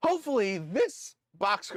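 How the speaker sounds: voice breaking and cracking mid-phrase. Speaker talking to viewers about pizza places, voice cracking. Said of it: "my voice just cracked".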